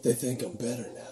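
alluring, seductive, yet sinister and creepy tone. Asked by a newcomer whether it comes from hell, a figure replies in a seductive, creepy voice. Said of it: "that seductive, creepy voice".

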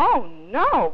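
startled, shocked tone. A narrator reads a character's reply to an officer, in a shocked voice. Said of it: "Robert told him in a shocked voice".

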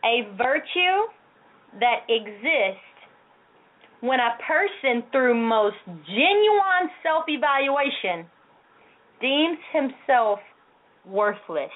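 drawn out, very slow, deliberate, word by word. Reading a definition of humility aloud to listeners, speaking very slowly. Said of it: "I'm going to speak slow".

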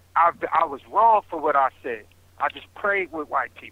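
plain

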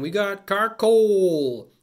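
high, loud, slow mock Canadian accent. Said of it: "talking with a Canadian accent".

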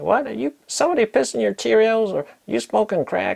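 put-on southern drawl, very high. Quoting a man whose channel you find very funny, imitating a Southern drawl. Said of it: "in his southern kind of drawl accent".

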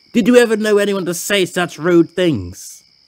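angrily fuming. Narrator reads a character speaking in the sheds, fuming. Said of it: "Ernest fumed in the sheds".

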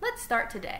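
usual speaking voice

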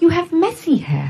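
put-on high small child's voice with British accent. Retelling what a little girl said to record company people, in a little British accent. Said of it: "She's this little British accent".

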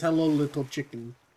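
put-on dim-witted, dumb cartoon character voice. Showing how the cartoon character says his line: imitating Ed from Ed, Edd n Eddy. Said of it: "the way he says".

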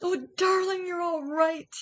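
relieved, very high-pitched exclamation. Reading a story, the mother hare to her rescued daughter: crying out. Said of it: "cried the mother hare".

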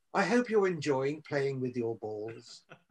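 proper, prim, teacherly school-mom voice, soft. Quoting instructions from a bit, the speaker uses a prim, proper school mom voice. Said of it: "proper school mom's voice".

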